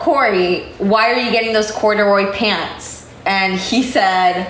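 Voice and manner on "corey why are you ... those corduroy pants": usual speaking voice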